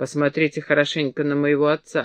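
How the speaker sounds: ordinary delivery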